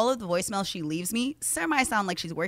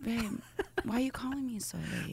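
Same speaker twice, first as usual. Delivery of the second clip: mock drowsy murmur, soft and light; 5 semitones higher, 7 dB quieter than usual. Acting out answering a partner's late phone call, in a mock sleepy voice. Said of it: "Sleepy voice".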